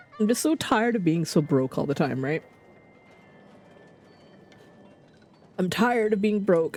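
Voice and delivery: choked-up voice breaking with emotion. Speaker, after apologizing for getting choked up, keeps talking choked up. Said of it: "I just get all choked up".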